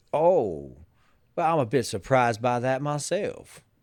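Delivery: Southern accent delivered in a lawyerly style. Speaker does a voice to help the other person get in the mood: Woody impression. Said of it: "No, I just got Southern".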